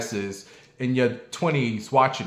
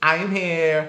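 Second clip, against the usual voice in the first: put-on little girl voice, higher; 5 semitones higher than usual. Retelling an interview, quoting the little girl: imitating a little girl. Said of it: "That's the little girl".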